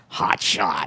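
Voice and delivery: low, gruff voice. Retelling a phone call after winning the Pulitzer: imitating Paul Newman's gruff voice. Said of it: "then a gruff voice with no hello says".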